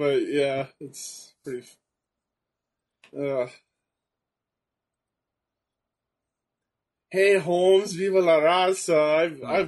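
speaking through laughter. Recounting what people used to say to him, laughing while talking. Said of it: "I'm sorry I'm laughing".

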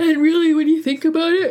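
words stretched by a yawn. Speaker talking through a yawn, coffee not yet taken effect: yawning while talking. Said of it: "sorry, yawning".

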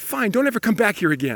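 imitated angry outburst. Retelling shouting at a player wandering off: retelling losing temper. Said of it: "And I just lost it".

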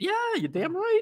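voice shooting up an octave, very high. Agreeing emphatically with the other speaker's advice to negotiate, voice jumping up high. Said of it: "your voice went up an octave or two".

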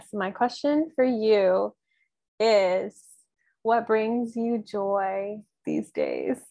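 giggly voice with swooping pitch, spoken through giggles. Invited to turn the tables, the speaker asks the interviewer a question, with a giggle. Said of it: "You said it with a giggle".

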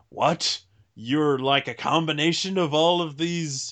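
put-on dramatic, exclaimed outburst. Retelling a cartoon fight scene: imitating a dramatic exclamation. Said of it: "he gets to experience all the dramatic".

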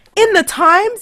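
very high, very loud shrieking scream. Retelling hanging up after hearing the news: imitating own screaming. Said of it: "I was screaming".

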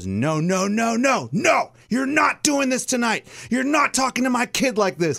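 very high-pitched motherly yelling voice. Retelling how a mom confronted a coach at baseball: imitating a mom yelling. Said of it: "yelled at the coach".

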